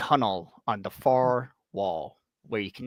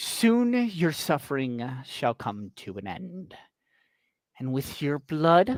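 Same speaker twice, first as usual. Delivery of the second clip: demonic voice; 2 semitones higher, 3 dB quieter than usual. Voicing a devil who has just appeared before the party: devil voice. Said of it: "He looks at you all and says".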